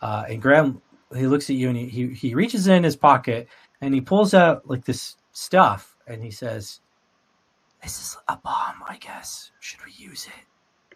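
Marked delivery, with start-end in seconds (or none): 7.8-11.0 barely voiced, hushed whisper. A game narrator voices Graham speaking to the player, Graham whispering. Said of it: "he whispers that to you".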